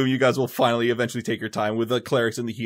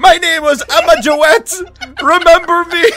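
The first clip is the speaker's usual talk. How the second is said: shouted dying cry; 9 dB louder than usual. Voicing a burning mummy who shouts her name: mummy shouting her name. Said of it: "She shouts it out in ancient Assyria".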